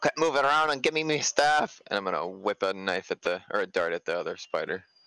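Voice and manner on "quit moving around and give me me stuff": loud, high-pitched yelling. Speaking in character to someone up on a roof: yelling up at someone. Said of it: "he's gonna yell up at".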